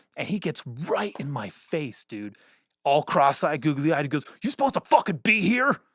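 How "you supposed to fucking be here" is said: pitched-up, confrontational, challenging delivery up close. Retelling a run-in at a show, doing a Gary Busey impersonation. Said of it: "I do a good Gary Busey impersonation".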